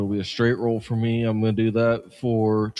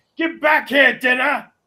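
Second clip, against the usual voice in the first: shouting in character voice, higher and louder; 6 dB louder than usual. Voicing a character running toward a crab: yelling in character. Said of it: "runs to the side where the crab was and yells".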